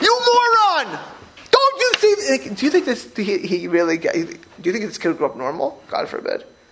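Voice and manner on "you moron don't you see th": very high, shrill, drawn-out, furious angry screaming. Imagining yelling at a toddler who made a mess: imitating screaming in anger. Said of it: "imagine I would scream my head out".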